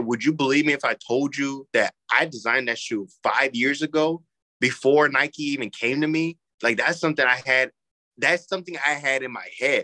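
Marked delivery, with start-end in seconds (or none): none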